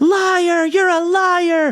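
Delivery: put-on shrill shriek, very high and stretched. Retelling a heckler at a State of the Union, imitating Marjorie Taylor Greene screaming.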